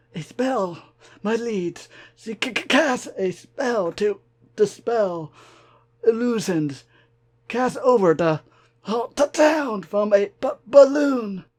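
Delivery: badly hurt, pained voice with coughing. A wounded changeling reports to his liege; wounded, coughing changeling. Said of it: "at his cracked carapace, broken horn, and half-severed leg. / at his cracked carapace, broken horn, and half-severed leg. / I posed as a stallion called [name]. / The cough exploded from him in a show".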